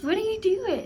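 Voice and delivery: put-on cooing, high, slow sing-song baby talk.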